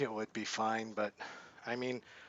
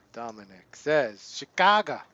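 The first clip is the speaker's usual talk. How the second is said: very loud, worst-ever Chicago accent; 10 dB louder than usual. Reading out Dominic's answer, in a bad Chicago accent. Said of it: "That's my worst Chicago accent ever".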